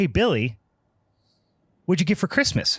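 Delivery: put-on self-satisfied, sarcastic tone, high-pitched. Joke teller voices billy's parents greeting him, imitating a sarcastic tone. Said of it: "in kind of a sarcastic tone".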